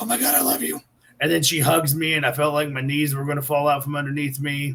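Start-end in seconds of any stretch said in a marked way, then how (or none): 0.0-0.8 high, trembling starstruck whisper. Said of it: "I'm just shaking, trembling".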